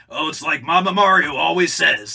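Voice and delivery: loud, high, rough Brooklyn accent. Pitching a new portrayal of the Mario Brothers for the games: rough Brooklyn Mario voice. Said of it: "the more rough Brooklyn".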